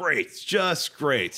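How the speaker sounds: put-on sarcastic voice. Retelling a movie scene where a car is crashed: sarcastic Marty McFly line. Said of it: "this thing called sarcasm".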